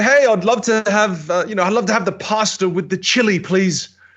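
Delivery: loud projected voice. Demonstrating for a learner how to order food, using a louder voice. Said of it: "Just use a louder voice".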